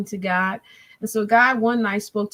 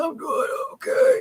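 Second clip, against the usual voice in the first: mock feeble, barely-there, weak, breathless voice; 8 semitones higher than usual. Retelling phone talks with him while he was quarantined and very sick: imitating a weak breathless voice. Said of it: "Can't barely talk. Can't barely breathe".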